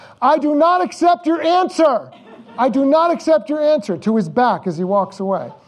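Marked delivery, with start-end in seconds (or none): 0.2-4.0 mock yell, very high-pitched and loud. Retelling shouting after someone walking away down a long hallway: imitating own past shout. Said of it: "I'm shouting ahead of him".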